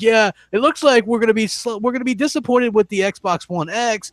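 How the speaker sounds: play-acted, high, fawning, suck-up tone. Mocking a video host who is sucking up to someone, in a mock-fawning tone. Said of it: "like kissing his ass".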